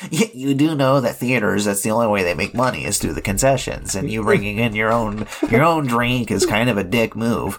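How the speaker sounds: put-on preppy nerdy jerk voice. Imagining telling the beer drinkers off: put-on preppy nerdy asshole voice. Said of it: "that preppy, like, you know, nerdy asshole".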